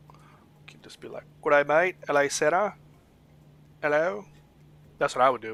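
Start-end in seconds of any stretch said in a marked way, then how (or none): 1.4-4.2 put-on Australian accent. Suggesting a voiceover idea to a co-host, trying an Aussie accent. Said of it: "try doing like an Aussie accent".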